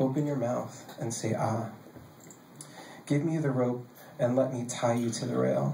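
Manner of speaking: ordinary delivery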